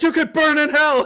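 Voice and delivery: very high, shrill, loud yell. Retelling a ride as it starts going up, imitating Mayor yelling. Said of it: "he's like yelling".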